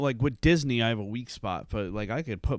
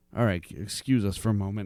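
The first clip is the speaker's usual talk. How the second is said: ordinary talk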